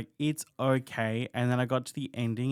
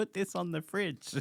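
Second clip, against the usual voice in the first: put-on little kid voice, soft and high; 6 semitones higher, 6 dB quieter than usual. Acting out a little kid handing over a drawing: imitating a little kid. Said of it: "like a little kid being like".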